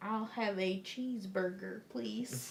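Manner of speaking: clumsy, bad, fake American accent. Retelling how someone on a show did an American, in a bad American accent. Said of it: "Can you do an impression of an American?".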